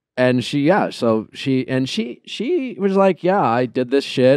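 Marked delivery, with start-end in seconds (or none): 3.3-4.4 sad, sorrowful, remorseful tone. Retelling what someone said on a call: imitating someone sounding sad. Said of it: "she sounded sad".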